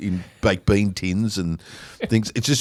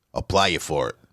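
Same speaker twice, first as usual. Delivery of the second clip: put-on thick Australian accent, much lower pitch; 4 semitones lower than usual. Recounting what Bill Hunter says, doing the line as a Bill Hunter impression. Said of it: "thickest Australian accent".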